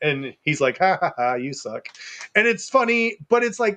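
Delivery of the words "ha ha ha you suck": put-on flirty teasing voice, lower. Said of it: "playful lovers banter, flirty".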